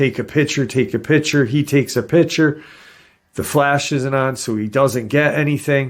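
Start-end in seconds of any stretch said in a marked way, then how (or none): 0.0-1.4 mock eager, insistent, urgent, excited, repeated. Retelling everyone in the car: retelling everyone yelling. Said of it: "everyone's yelling".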